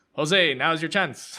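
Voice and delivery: put-on Irish-sounding accent, called out. Quoting a character's line from a show's most intense moment, Irish-sounding accent. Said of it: "It sounds Irish when I'm repeating it".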